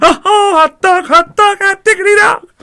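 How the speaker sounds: put-on cartoon mouse voice. Doing open heart surgery in character, as asked: Mickey Mouse voice. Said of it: "Mickey Mouse".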